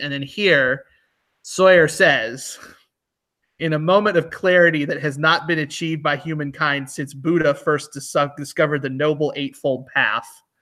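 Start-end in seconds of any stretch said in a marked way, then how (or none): none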